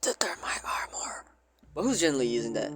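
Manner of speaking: hushed whisper. Game streamer naming an armor while wind sounds keep interrupting, whispering.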